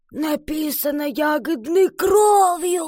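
eerie, creepy croaking rasp, drawn out. Iva draws a face in her forest diary with berry juice: creepy rasping voice. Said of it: "прохрипела она жутким голосом".

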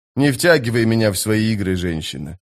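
plain

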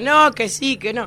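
high, loud mock insistence.

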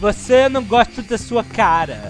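slow, sing-song mock non-native Portuguese accent.

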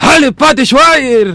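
loud shouting. Reading out a listener's message, a host bursts into shouting loudly. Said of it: "No grites tan fuerte".

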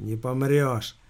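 lazily drawled. A boss reassures his subordinate, lazily. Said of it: "лениво заверил Тупозаглот".

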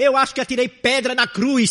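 loud, high-pitched angry blurted outburst.

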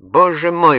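astonished, high, surprised exclamation. A man reacts to another man's plan with a surprised exclamation. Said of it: "воскликнул Эйл, с удивлением".

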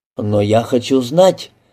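ordinary delivery, nothing marked

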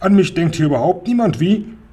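high crying out. Reading Räuber Hotzenplotz after Grandmother speaks to Seppel, cried out. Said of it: "rief der Räuber Hotzenplotz".

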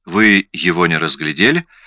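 ordinary delivery

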